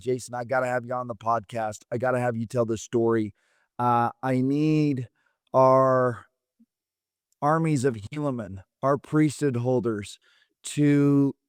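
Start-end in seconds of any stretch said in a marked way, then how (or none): none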